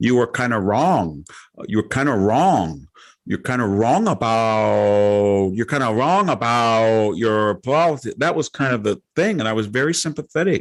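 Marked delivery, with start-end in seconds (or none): 0.0-8.2 imitated Chinese accent. Retelling a caller's opening words, imitating a Chinese accent. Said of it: "she had a Chinese that".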